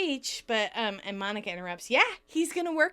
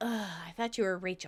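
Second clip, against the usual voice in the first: sighing, lower and quieter; 4 semitones lower, 5 dB quieter than usual. Reading Monica's line as Chandler enters: sighing. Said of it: "Monica sighs".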